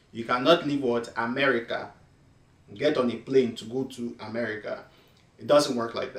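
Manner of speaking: Nigerian accent, put on. Speaker restating their complaint about the travelers, now in a Nigerian accent. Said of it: "Let me say it in Nigerian accent".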